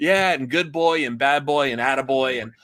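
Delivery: put-on sarcastic voice. Retelling a cartoon scene, quoting Garfield: sarcastic Garfield voice. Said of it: "being the sarcastic bastard that he is".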